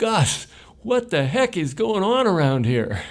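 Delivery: play-acted, very high, booming, high-pitched shout. Recalling a man spotting him from the top of the stairs in a crowded foyer; retelling a booming yell. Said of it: "had a booming voice, and he yelled out".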